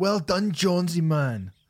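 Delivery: put-on Scottish accent. Congratulating the artist on the album: put-on Scottish accent. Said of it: "I keep doing him in a Scottish".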